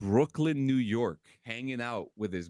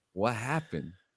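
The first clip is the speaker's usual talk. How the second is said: whispered delivery; 2 semitones lower than usual. Retelling asking someone in formation what happened: retelling a whisper. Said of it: "and I whispered at him".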